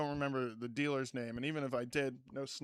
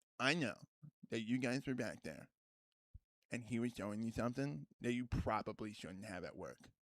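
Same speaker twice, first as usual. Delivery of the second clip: mock dead-serious, low tone, no joking; 4 semitones lower, 8 dB quieter than usual. Retelling a coworker confronting the speaker at work, imitating someone super serious. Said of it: "he comes up to me and like super seriously".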